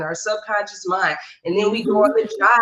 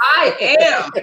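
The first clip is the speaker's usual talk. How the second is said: bold, emphatic, louder and pitched up; 5 semitones higher, 4 dB louder than usual. Asked to say the affirmation again, louder: saying it louder. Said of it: "Say it louder".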